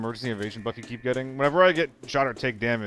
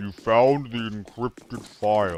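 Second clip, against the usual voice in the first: put-on down-pitched, lowered voice; 4 dB louder than usual. Repeating a game character's line after noticing it: imitating a down-pitched voice.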